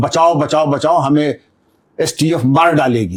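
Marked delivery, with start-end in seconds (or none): none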